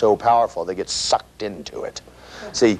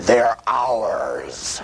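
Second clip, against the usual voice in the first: extremely demonic, hellish chorus voice. Recounting a vision, the speaker voices a chorus in the most demonic voice imaginable. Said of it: "says in the most demonic voice you could imagine".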